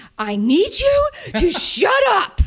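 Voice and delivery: put-on, very high, slow, drawn-out swooping shout. Retelling what the husband shouted at her: imitating husband shouting. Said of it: "He shouted at me".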